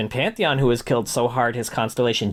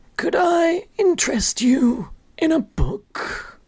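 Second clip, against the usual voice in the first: put-on very high-pitched elderly man character voice. Challenged to do an impression first, the speaker performs an old man voice. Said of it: "An old man".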